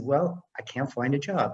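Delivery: ordinary talk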